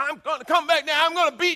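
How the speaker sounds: very high yelling and screaming. Imitating a parent in the car to church: imitating screaming at kids. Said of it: "you're screaming at the kids".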